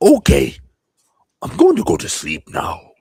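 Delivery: loud, high-pitched evil clown voice. Quoting what he says to her as he takes her hand, Pennywise voice. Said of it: "practice my Pennywise voice".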